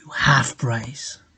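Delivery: hushed, private whispered aside. Retelling what a tattooist said while tattooing: imitating a whisper. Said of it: "he even whispered to me".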